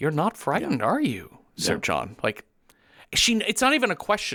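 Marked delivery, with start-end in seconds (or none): 0.0-2.2 curious, inquisitive tone. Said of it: "it's a curiosity".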